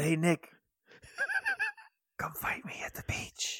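mock soft ASMR whispering. Imitating a character calling someone to fight: imitating Korag in ASMR whisper. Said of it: "Stop it with the A S M R".

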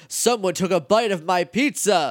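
exaggerated, over-the-top voice. Retelling what a man said, in an overblown voice. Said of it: "talking to him in like this really overblown voice".

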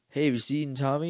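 ordinary talk, nothing marked

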